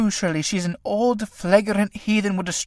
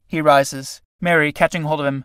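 plain

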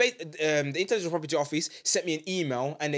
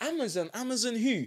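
put-on naive, clueless confusion, pitched up; 6 semitones higher, 4 dB quieter than usual. Retelling a call with a lawyer, imitating own feigned naive confusion. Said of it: "I acted naive".

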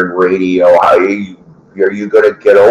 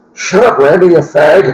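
rough put-on voice, pitched a little higher, loosely done; 8 semitones higher than usual. Imitating a radio show side character telling his boss off: weak Donnie Baker impression. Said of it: "And he kinda talked like this".

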